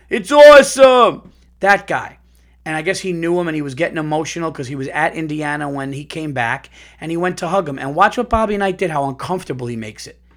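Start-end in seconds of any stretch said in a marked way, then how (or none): 0.1-1.3 excited sports announcer voice, higher and louder. Describing a college basketball announcer for listeners: Dick Vitale impression. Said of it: "I know it's a good Dick Vitale impression".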